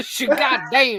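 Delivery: put-on Southern drawl, very high pitched. Saying a phrase on request like someone from the South: Southern accent. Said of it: "can you say that like you're from the South?".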